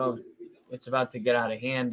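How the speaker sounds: normal talking voice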